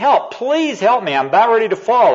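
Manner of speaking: desperate high-pitched shout.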